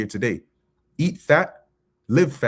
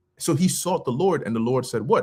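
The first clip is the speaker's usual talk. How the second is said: normal talking voice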